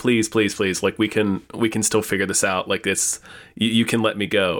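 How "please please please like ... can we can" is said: ordinary delivery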